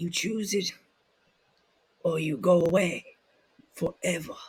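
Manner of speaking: put-on Southern drawl. Showing a Bray Wyatt impression with his drawl. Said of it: "just started doing the accent".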